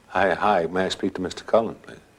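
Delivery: plain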